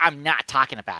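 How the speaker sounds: loud, put-on, self-teasing mocking tone. Repeating own earlier line to make fun of how it sounded: mocking own earlier remark. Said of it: "that did sound like".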